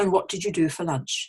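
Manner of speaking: normal falling intonation on the word lunch. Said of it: "So normally they'd ask".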